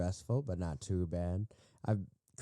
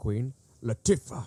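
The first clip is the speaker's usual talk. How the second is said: hard, punched stress on the t of a name; 4 semitones higher, 5 dB louder than usual. Imitating how someone read out a nominee's name, heavy emphasis on the t. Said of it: "he puts like the emphasis on the T. He's like".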